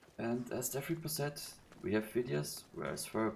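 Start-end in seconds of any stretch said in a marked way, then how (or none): none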